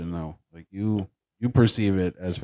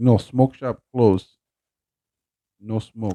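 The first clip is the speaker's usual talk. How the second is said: put-on, fake Eastern European accent; 2 semitones higher than usual. Retelling answering drive-through customers at a closed smoke shop, in a put-on Eastern European accent. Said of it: "I can get away with like a Eastern European accent".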